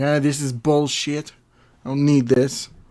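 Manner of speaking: loud, put-on Russian accent. Imitating an actress who refused an acting coach: Russian mixed with Tommy Wiseau voice. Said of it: "that sounded like a, a Russian mixed with Tommy Wiseau".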